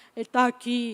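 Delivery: big, booming, deep grown-up voice. Mother retelling her twelve-year-old son's reply, imitating Gustavo's deep voice. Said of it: "aquele vozeirão".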